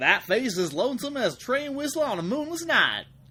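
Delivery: thick Southern American accent. Quoting a line that seems made for a strong southern accent: strong southern accent. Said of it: "something with a really strong southern accent should be saying it. Like".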